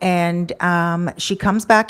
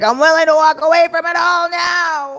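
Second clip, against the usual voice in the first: mock, very high, loud, tearful drunken yelling; 10 semitones higher, 5 dB louder than usual. Mimicking a drunk woman who said she would walk away: retelling a drunk woman's yelling. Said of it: "Sorry if I'm yelling in the microphone".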